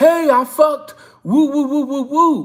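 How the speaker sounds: high, crowing, whooping holler with woo-woos. Mocking a man who shouts a woman's name to the rooftops: imitating a shout. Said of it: "shout it to the rooftops".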